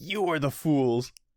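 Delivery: mild, fierce, mock half-shouted taunt kept small. Retelling a manga scene, imitating Shinobu screaming. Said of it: "Shinobu screaming, like".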